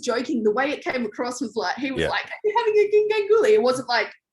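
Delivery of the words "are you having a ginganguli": put-on smiling mocking tone, much higher pitch. Retelling how Ant called up during a task, imitating Ant's smiling tone. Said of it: "smiling. He was smiling".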